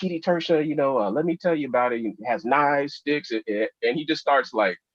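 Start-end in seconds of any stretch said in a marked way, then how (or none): 0.0-3.3 deliberately bad, high, eager, gushing teacher voice. Retelling a teacher's excited answer to a question: bad Leslie impression. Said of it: "it's a bad impression of Leslie".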